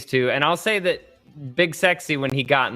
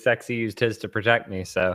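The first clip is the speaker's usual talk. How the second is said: ordinary delivery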